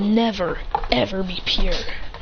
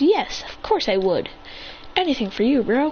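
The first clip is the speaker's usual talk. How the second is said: ordinary delivery, nothing marked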